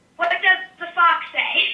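ordinary talk

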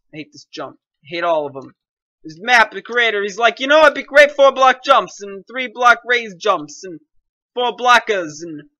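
loud, horrible put-on Boston accent. A player complaining while playing a jump map, in a really crappy Boston accent. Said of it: "Why am I putting on a really crappy Boston accent?".

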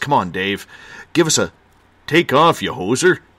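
mock, put-on Canadian accent. Host reading a listener's comment aloud to Dave, in a Canadian accent. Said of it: "There's a good Canadian accent".

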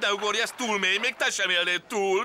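pleading. In a drama, a character pleads with Szidi, begging. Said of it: "könyörögve kérlek".

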